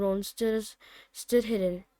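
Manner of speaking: ordinary delivery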